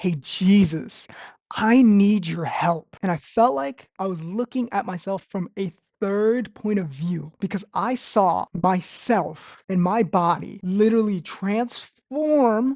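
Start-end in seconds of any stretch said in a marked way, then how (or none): 0.0-3.0 hard-pushed, forceful, insistent, aggressive delivery. Retelling saying a prayer for help one more time: retelling an aggressive plea. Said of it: "I said it aggressively".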